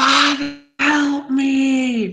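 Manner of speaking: shrill, very high scream with "me" stretched long. As he runs down, a child calls to his father; screaming for help. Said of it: "he screams".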